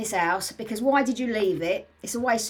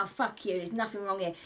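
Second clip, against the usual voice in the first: put-on rude, dismissive voice, quieter and faster; 2 semitones lower, 7 dB quieter than usual. Retelling a cocksure visitor at the cage, imitating a rude, dismissive woman. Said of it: "she's like".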